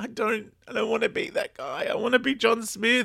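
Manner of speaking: tearful, very high-pitched sobbing, crying. Retelling an episode's scene to a listener, imitating someone crying. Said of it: "And he starts crying and he's like".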